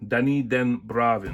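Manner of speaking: Netherlands accent. Speaker saying a person's name the proper way, with a dutch twang. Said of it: "with the proper Netherlands twang".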